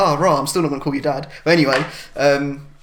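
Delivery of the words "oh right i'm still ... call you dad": ordinary talk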